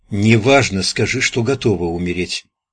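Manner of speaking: plain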